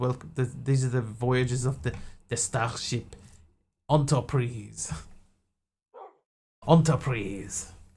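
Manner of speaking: put-on French accent. Retelling a Star Trek opening recorded as Jean-Luc Picard with French accent. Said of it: "French accent".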